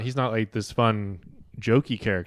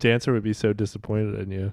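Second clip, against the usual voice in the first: normal talking voice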